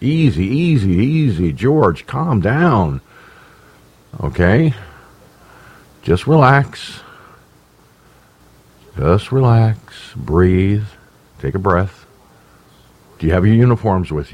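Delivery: mock gentle, soothing, coaxing calming tone. Retelling how a general calmed a panicked caller: imitating a calming general. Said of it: "that general really knew how to calm me down".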